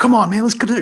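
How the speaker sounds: very high-pitched, loud, pumped-up hyped call. Teaching vocal range, the speaker demonstrates a line with energy. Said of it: "you get to have that energy".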